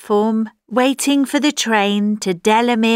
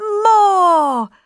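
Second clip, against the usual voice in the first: high-pitched, loud shout. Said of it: "We're all shouting".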